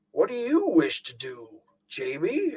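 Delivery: put-on soft, swooping, sing-song old man voice. Reading a gamebook aloud, Pedagog questions Jamie; Pedagog's old man voice. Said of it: "It makes the old man voice".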